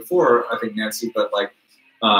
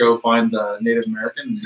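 usual speaking voice

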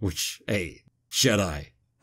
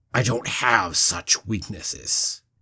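said with a growl. Recounting a scene where Anakin answers after slicing off arms, retelling Anakin's growl. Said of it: "growls out".

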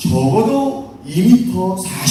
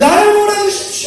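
angry cry, high and loud. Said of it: "너무너무 화가 나서 이렇게 외쳤어요".

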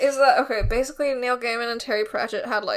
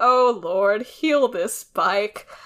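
slow, sarcastic, drawn-out, play-acted mocking tone. Fan recapping a TV scene, quoting a character's mocking remark, imitating Crowley mocking. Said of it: "Crowley says mockingly".

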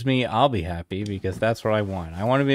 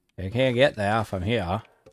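put-on Maine accent; 2 semitones lower, 4 dB quieter than usual. A Mainer showing how Mainers supposedly talk, Pepperidge Farm guy's Maine accent. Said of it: "talk like the Pepperidge Farm guy".

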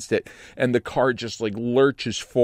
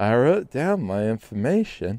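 mock drunken woman's slurred speech. Retelling what a drunk driver said after a crash: imitating a drunk woman's slurring. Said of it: "she slurs".

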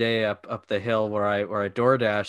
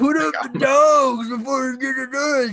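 mock very high, shrill yell; 4 dB louder than usual. Speaker retells hearing a man inside a house while trying to knock, retelling a man yelling. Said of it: "I just hear this guy like yelling like".

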